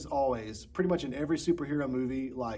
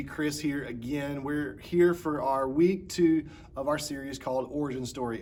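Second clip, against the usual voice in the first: ordinary talk, nothing marked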